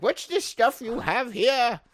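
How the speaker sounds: very high-pitched storybook witch voice. Imagining an eccentric old aunt finding gore on the floor: witch voice. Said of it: "I don't know why I made her a witch".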